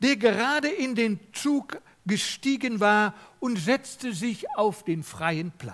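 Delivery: plain reading voice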